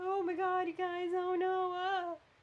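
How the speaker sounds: very high, slow, drawn-out whiny wail. Comparing two characters, the speaker imitates Keyleth's high-pitched voice. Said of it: "Keyleth had like a really high pitched voice".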